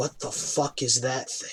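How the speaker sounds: very quiet, breathy whisper, barely above breath. Game master voicing a startled bandit speaking to a player's character, whispering. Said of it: "He whispers to you".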